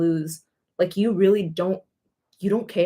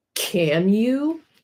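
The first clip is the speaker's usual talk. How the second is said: acted, sassy, dry sarcastic put-down tone; 3 semitones higher than usual. Imitating a teacher answering a student who asks for the bathroom, mimicking a sarcastic teacher. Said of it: "and they're all sarcastic".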